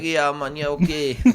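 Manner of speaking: put-on Jamaican accent. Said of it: "He's a Jamaican Rasta man".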